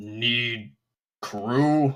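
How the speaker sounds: halting, broken monster speech with "need" dragged out. Pounding its chest, the bugbear speaks broken Common. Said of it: "the big bugbear just goes... he understands some common, but not a lot".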